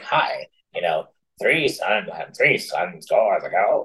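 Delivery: slowed, dragged-out, detuned, deep low voice. Imitating a recorded YouTube reading that was slowed down: imitating a slowed-down, down-tuned voice. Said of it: "he sounded like".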